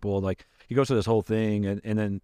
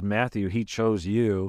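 ordinary talk

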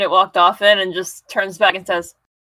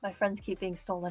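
barely audible, very quiet whisper; 17 dB quieter than usual. Voicing a character who speaks unheard by the others: whispering. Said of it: "but Plaque whispers".

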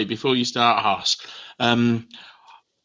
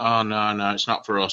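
normal talking voice

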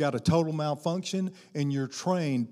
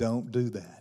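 very gentle voice, lower and quieter; 4 semitones lower, 5 dB quieter than usual. Retelling the still small voice warning not to pull: very gentle. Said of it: "Very gentle".

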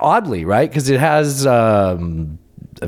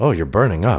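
ordinary talk, nothing marked

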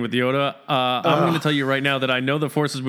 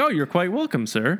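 put-on droid voice, pitched higher; 5 semitones higher than usual. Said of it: "he's like".

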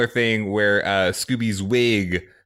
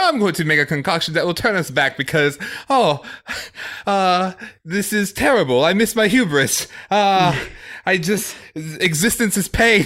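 very high brainy character voice; 10 semitones higher than usual. Retelling how Super Smart Scooby hated being smart: Super Smart Scooby voice. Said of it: "He's like".

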